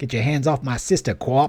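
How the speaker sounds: funny, comic put-on Boston accent. Retelling a line two kids say to each other, in a funny Boston accent. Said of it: "they do a really funny Boston accent".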